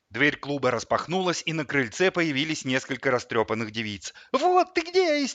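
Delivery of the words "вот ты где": frantic, shrill, hysterical scream, pitched way up. Narrator voicing one of the girls appearing at the club door: hysterical scream. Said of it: "истерически завопила одна из них".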